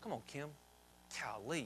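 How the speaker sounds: very low, soft, muttered, mock-exasperated aside.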